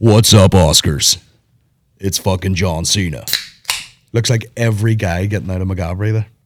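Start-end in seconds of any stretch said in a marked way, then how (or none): 0.0-3.2 low, slow wrestler-style voice, dropped low, dragged out. Joking about how a star would greet the Oscars: imitating John Cena. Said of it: "he doesn't talk like that anymore".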